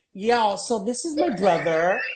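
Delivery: put-on American accent, spoken slowly. Retelling how a daughter films a vlog at home: imitating Venice's American accent. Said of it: "why are you talking with an American accent?".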